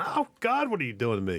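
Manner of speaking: wounded, pained half-scream. Describing oversensitive patients who can barely be touched, imitating them screaming in pain. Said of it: "without them just screaming".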